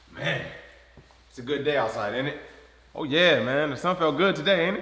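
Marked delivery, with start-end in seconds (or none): 0.2-2.4 soft, tongue-in-cheek sarcastic delivery. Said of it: "I was being sarcastic".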